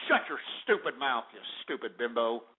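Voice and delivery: low, upset, angry insulting outburst. Ranting about a company heir, then snapping back: upset angry outburst. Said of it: "I better calm down here".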